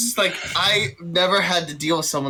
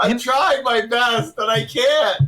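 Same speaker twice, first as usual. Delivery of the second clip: talking through laughter, higher; 5 semitones higher than usual. Playing a character who can't stop laughing at a stalker: laughing while talking. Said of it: "just laughing like".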